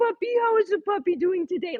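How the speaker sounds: put-on baby talk.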